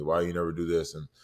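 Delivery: ordinary delivery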